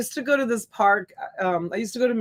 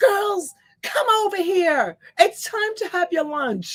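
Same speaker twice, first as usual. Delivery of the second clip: mock wild, crazy, very high-pitched yelling; 11 semitones higher, 3 dB louder than usual. A mom recalls calling her girls over for lunch at the park, retelling her own crazy yelling. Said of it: "crazy yelling like a crazy Italian".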